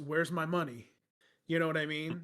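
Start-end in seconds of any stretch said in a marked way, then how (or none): 0.0-0.9 put-on Italian mobster voice. Joking about someone coming to collect on too many loans, in an italian mobster voice. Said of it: "like a Italian mobster and goes".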